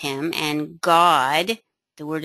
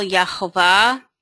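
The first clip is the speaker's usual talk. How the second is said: Yehovah with stress on final syllable -vah; 2 semitones higher than usual. Explaining how to pronounce a name, stress on last syllable of yehovah. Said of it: "The emphasis is on the last syllable".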